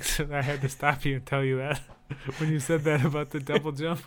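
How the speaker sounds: talking through laughter. Interrupting someone to explain a remembered game line, laughing while talking. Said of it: "I can't stop laughing".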